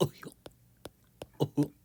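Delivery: silly put-on cartoon voice, high and loud. While explaining layers of their work, the speaker slips into a goofy impression voice. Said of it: "That's my goofy impression".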